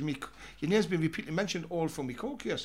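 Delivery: ordinary delivery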